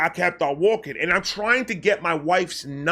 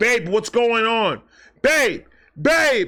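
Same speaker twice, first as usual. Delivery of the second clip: put-on loud screaming, calling out over and over; 4 semitones higher, 4 dB louder than usual. Retelling how his wife reacted on the phone: imitating wife screaming. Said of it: "she's screaming at me".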